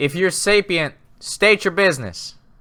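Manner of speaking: high-pitched shout, calling out. Shouting up to something unseen from a train roof: shouting up in character. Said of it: "I kinda shout up".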